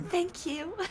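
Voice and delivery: imitated soft, gentle speaking voice. Teasing the other player about their thanks: imitating a soft thank you. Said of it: "That was such a soft".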